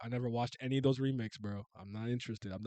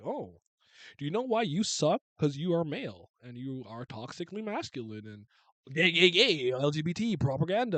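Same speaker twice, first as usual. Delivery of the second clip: snarky, sneering, preachy lecturing voice; 3 semitones higher, 4 dB louder than usual. Imitating Hollywood preaching at viewers with snark: mocking snarky Hollywood voice. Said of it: "have all this snark and be like".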